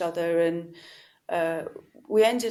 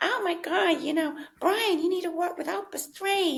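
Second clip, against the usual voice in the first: brash, pushy New York voice, pitched very high; 12 semitones higher than usual. Retelling what Marcy said to the person she managed, imitating Marcy's brash New York voice. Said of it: "a New Yorker, like with a very brash voice".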